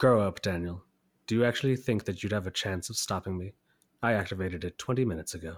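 soft-spoken, low and quiet voice. Trying the villain line again as the movie actor: soft-spoken Ozymandias voice. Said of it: "the movie guy's impression, that actor".

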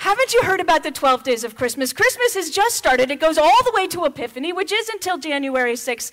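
mock loud, preachy rant going on and on. Retelling a reply to a son about Christmas: retelling own rant. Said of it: "I went on a rant".

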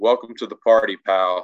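ordinary delivery

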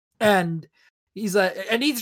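ordinary delivery

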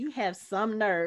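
plain

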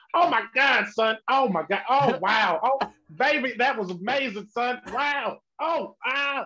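high, slow, drawn-out put-on celebrity comedian voice. Imagining a comedian's reaction to the best special ever, in a Dave Chappelle voice. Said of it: "I gotta do it in a Dave Chappelle".

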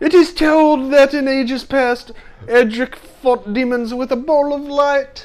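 put-on English accent, high and loud. Reading aloud the legend of Erdrick and the Dragon Lord, in an attempted English accent. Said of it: "I love how many people you probably just offended".

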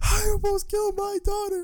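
mock very high, tearful crying wail. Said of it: "he's crying. He's like".

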